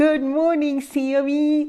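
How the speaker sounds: odd, very high, weird tiny voice. A parent greeting their daughter among others, in a weird little voice. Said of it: "I get this really weird little voice when I talk to my daughter".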